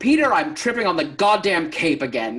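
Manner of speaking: loud yelling. Retelling an impression of Christopher Lee yelling at the director about a cape: imitating Christopher Lee yelling. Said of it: "I wanna imitate Christopher when he yelled at Peter".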